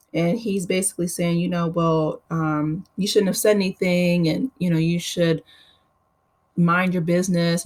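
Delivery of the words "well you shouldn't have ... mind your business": ordinary delivery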